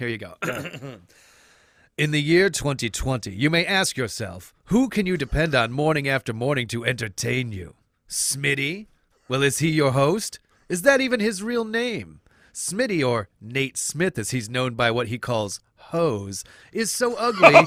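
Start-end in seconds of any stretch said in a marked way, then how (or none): 2.0-17.5 goofy, silly political attack-ad announcer voice. A host performs a mock attack ad against the other host: silly announcer voice. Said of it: "So I'm going to get into my silly announcer voice".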